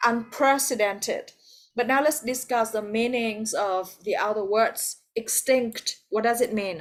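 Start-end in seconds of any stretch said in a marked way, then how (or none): 0.1-1.3 unprecedented with second syllable prec leaned on. Teaching the word unprecedented, with stress on the second syllable. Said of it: "the second, I'm sorry".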